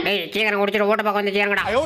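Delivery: deep, very low calling voice.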